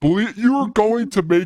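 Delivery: very high screamed line. Retelling a movie scene where one character screams at another, retelling a scream. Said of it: "like he's screaming at him".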